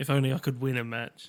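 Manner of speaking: put-on muttering under the breath. Retelling a character's line said under his breath: imitating muttering. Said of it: "I think he says underneath his breath".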